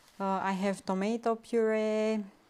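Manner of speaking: usual speaking voice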